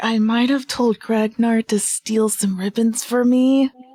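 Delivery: whispered words in a put-on character voice. Voicing a character leaning in to confide in another: whispering in character. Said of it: "leans into Luke and whispers".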